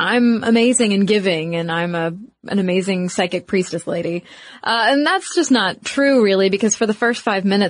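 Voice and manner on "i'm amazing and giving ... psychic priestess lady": normal talking voice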